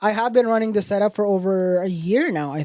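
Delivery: plain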